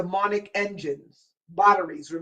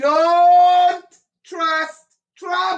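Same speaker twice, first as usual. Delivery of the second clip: rising, high-pitched yelling, building up; 9 semitones higher, 5 dB louder than usual. Speaker warning the audience, then apologizing for it; yelling. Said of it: "I'm sorry for yelling".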